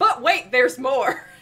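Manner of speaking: loud TV infomercial pitchman voice, hard sell. Reacting to the chat, doing an infomercial announcer voice. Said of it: "infomercial voice".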